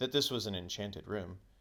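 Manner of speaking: plain reading voice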